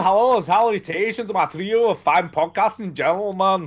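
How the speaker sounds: clumsy, bad put-on Scottish accent. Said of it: "Just go back to normal".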